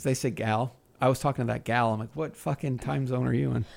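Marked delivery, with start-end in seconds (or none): none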